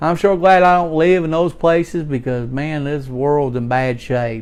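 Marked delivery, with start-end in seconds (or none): none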